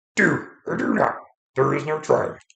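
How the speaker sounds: rasping, rough, creaky put-on character voice. Remembering what a movie character says, doing his voice: Yoda voice. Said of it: "It's hard for me to do his voice".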